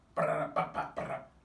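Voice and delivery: loud, high mock Japanese nonsense, spat out.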